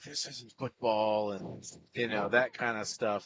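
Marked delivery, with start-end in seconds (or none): 0.0-1.3 put-on under-breath mutter, higher pitch. Retelling what the angry opposing coach kept saying: imitating someone muttering under breath. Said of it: "kept saying under his breath".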